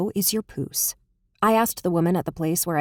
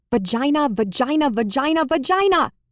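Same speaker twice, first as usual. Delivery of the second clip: high, furious, angry, repeated screaming; 8 semitones higher, 4 dB louder than usual. Reading a sisters' argument, one sister yelling back: angry screaming. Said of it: "Can you stop screaming that word at me".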